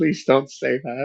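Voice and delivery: mock, high-pitched, desperate pleading tone. Retelling own past words during a stream: imitating a desperate plea. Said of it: "listen to me desperately go".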